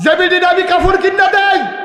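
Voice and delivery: high, loud indignant yell.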